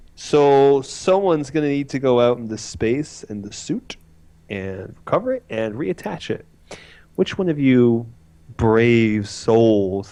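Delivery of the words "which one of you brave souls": mock, super condescending, patronizing talking-down delivery. Retelling how someone asked for a volunteer: mimicking a condescending tone. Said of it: "he says super condescendingly".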